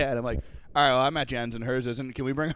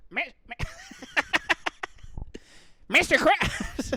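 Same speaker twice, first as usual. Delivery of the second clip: very high, drawn-out, slow squeaky voice. Doing SpongeBob impressions, now as SpongeBob: SpongeBob impression. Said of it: "SpongeBob would say".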